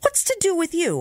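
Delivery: abrupt, very high-pitched, sudden blurted outburst. A man on board answers a voice from a boat: bursting out. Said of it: "I burst out".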